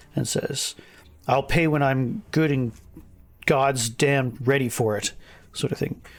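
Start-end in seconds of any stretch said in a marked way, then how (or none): 1.3-5.2 irate, defiant, angry character voice. Voicing a character poking a finger into a player's chest: angry character voice. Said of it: "his anger is coming from a deeper point".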